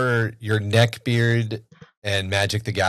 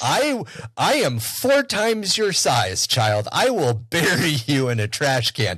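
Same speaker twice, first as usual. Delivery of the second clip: put-on angry, menacing tone; 5 semitones higher than usual. Recounting a kid in a game who made the speaker mad, mock-angry threat. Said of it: "Why am I so mad at you?".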